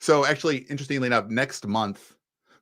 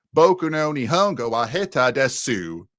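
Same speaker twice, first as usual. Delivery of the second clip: Japanese spoken slowly in thick Midwestern American accent. Speaking Japanese in a way that makes people cringe, heavy Midwestern American accent. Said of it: "like a very heavy Midwestern American accent".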